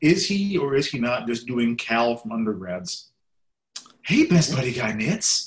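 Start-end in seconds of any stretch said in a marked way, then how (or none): 4.0-5.5 breathy put-on voice. Asking Dave whether a performer is just doing Cal, breathy Cal impression. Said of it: "It's very breathy".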